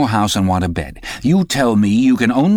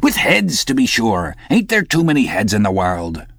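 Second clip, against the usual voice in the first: plain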